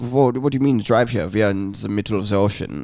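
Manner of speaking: imitated German accent. Retelling german visitors answering the dad's question about driving here, german accent. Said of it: "a really good German accent".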